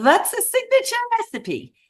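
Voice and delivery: very high, fake, bad Eastern European accent. Retelling what a woman asked, in a bad Eastern European accent. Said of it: "I'm going to do it anyway".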